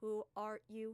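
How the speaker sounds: dead-flat, very monotone, expressionless delivery. Narrator voicing a stranger who awkwardly approaches the group, calling out; very monotone voice. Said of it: "calls out in this very monotone voice".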